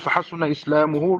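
ordinary talk

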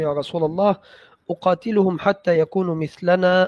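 normal talking voice

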